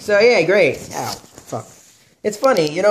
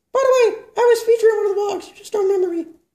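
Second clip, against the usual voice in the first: bad ventriloquist puppet voice, higher. Voicing a ventriloquist puppet greeting the host: Plumba Baba puppet voice. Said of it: "I'm a very bad ventriloquist".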